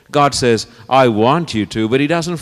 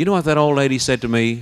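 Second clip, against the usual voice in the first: usual speaking voice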